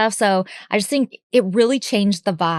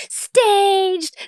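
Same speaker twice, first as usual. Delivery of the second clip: staged, high, mock screaming yell. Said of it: "we're literally screaming".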